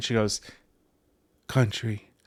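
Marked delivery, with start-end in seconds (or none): 1.5-2.0 hushed, quieter voice. Retelling how she named the music: imitating someone saying it quietly. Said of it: "she didn't say it out loud".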